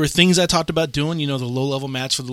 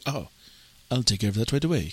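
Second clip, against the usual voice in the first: clumsy, horrible put-on British accent; 4 semitones lower, 5 dB quieter than usual. Retelling a friend's reply in a horrible British accent. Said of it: "I did a horrible British accent".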